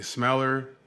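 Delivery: ordinary delivery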